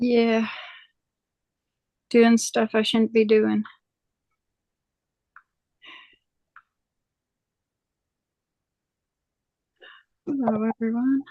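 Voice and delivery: breathless, out of breath. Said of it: "You sound like you're totally out of breath".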